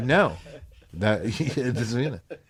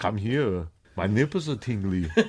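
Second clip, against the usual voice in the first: put-on Austrian accent. Showing off an Arnold impersonation, in an Arnold impression, Austrian accent. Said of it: "an Arnold impersonation ... I just do it best".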